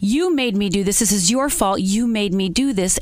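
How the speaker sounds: normal talking voice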